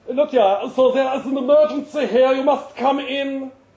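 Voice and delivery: put-on thick, laid-on German accent. Narrator reads the boss phoning about an emergency, in a thick German accent. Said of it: "my boss's thick German accent".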